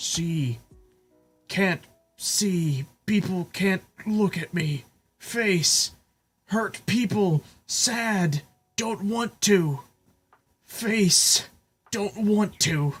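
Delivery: scared, high, very slow, broken words. Retelling what a frightened creature said to God, imitating a scared voice. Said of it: "in the scared, like, just voice".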